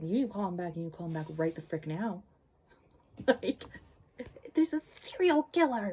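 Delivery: agitated, worked-up, heated delivery. A bookworm retelling a book's plot to listeners, worked up. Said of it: "I'm getting worked up".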